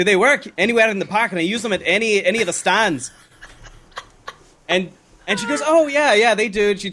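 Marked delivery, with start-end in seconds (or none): 0.0-3.1 put-on Scottish accent, higher pitch. Retelling asking a woman for clarification at checkout, in a Scottish accent. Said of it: "with the Scottish accent".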